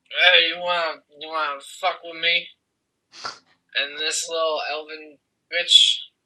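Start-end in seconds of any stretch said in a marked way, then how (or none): 0.1-2.4 put-on sloshed, boozy, drunken voice. Voicing a drunken character hitting on a woman: drunken character voice. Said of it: "in his drunken ass state".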